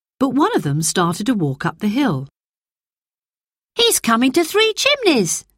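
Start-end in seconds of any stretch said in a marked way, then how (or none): 3.8-5.4 sudden, very high-pitched exclaiming. The narrator voices a character watching a passenger walk up the hill: exclaiming. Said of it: "exclaimed Peter".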